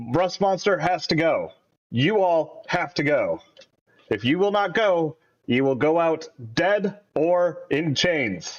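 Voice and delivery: intimidating. A player in character during a game, addressing the Rust Monster, intimidating. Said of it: "exactly how I feel like I would have spoken it".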